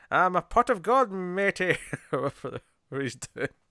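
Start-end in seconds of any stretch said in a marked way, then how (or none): 0.1-1.7 exaggerated, drawn-out, over-the-top fake Irish brogue. Speaker retells a film character's line to the other speaker, fake over-the-top irish accent. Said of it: "fake over-the-top Irish accent".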